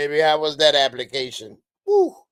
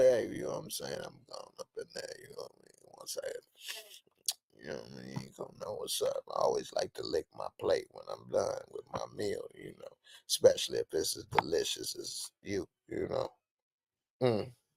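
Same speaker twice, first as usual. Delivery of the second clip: put-on breathy, hushed, seductive sexy whisper; 11 semitones lower, 14 dB quieter than usual. Acting out how he talked to a woman, mimicking a sexy tone. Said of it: "put in that little that little sexy tone".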